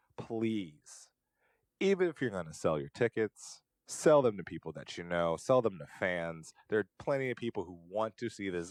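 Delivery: ordinary delivery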